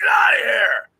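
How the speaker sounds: very high, loud yelling shout. Retelling yelling at a creature like a stray dog: imitating a yell. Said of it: "I yelled at it like it was, like, a stray dog".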